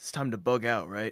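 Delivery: hushed, whispering voice. Voicing a character telling allies it's time to leave: whispering. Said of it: "Norman's gonna whisper to the Thunder Bros".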